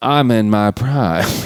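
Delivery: put-on old-West film-style western accent. In a movie-quote guessing game, giving the quote in a Tombstone accent. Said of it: "as soon as you do the accent".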